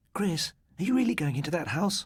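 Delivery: very high-pitched, breathless voice. Narrator voicing a classmate asking Chris a question after class: breathless. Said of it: "asked Dawn Sheehan breathlessly".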